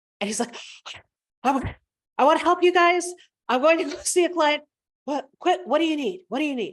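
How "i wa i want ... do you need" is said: put-on breathless talk, higher. Retelling a guy who came racing by, imitating someone out of breath. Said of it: "he's literally out of breath".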